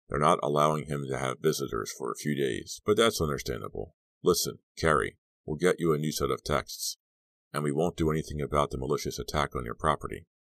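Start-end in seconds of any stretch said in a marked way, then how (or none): none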